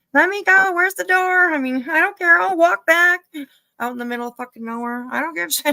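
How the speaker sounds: very high, loud, panicked, freaked-out screaming. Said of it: "I'd be yelling, screaming".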